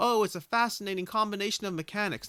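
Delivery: mocking earnest praise. Imitating a typical game testimonial: mocking testimonial tone. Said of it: "I say that with that tone of voice".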